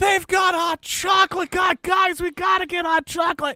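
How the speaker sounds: mock very high, frantic, overexcited freak-out. Describing a guy who sees someone getting hot chocolate: imitating someone freaking out. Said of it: "he loses his shit".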